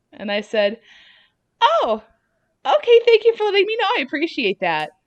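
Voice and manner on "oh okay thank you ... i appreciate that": phony, very high, raised customer-service voice. Retelling a reply to someone's warning about the men's room, in a bullshit customer service voice. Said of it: "in my like bullshit customer service voice".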